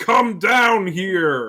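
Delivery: high-pitched, loud yelling. Imitating the movie's Scorpion, who yells everything: Scorpion yelling. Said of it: "he has to yell it".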